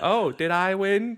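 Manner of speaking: voice pitched way up high. Recalling mocking a game character's victory line, high-pitched Peach imitation. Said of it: "we'd constantly be doing the".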